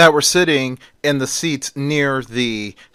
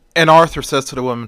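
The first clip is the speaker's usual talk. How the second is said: ordinary delivery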